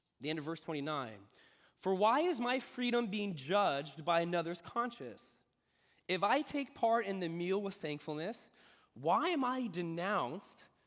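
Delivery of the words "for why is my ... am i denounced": normal talking voice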